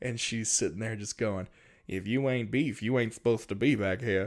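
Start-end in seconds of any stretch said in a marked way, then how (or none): 1.9-4.3 big ol' mama voice.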